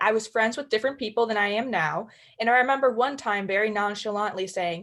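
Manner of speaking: ordinary delivery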